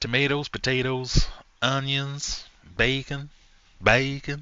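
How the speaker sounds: put-on American accent. Reading quiz answer options aloud in a put-on American accent. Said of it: "I don't know how to say them in an American accent".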